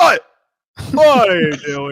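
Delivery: mock yell, loud, slow and high-pitched.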